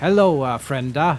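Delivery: fantasy dwarf voice. Describing how a game master voiced his dwarves, dwarven accent. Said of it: "That was like the dwarven accent".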